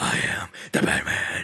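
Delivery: throat-straining gravelly whisper, hero voice. Warning against straining the vocal cords, doing a gravelly Batman voice. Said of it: "damage your vocal cords by doing this".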